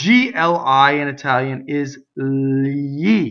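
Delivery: very slow, drawn-out delivery. Teaching the italian pronunciation of gli, saying it very slowly. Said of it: "I did it very slowly".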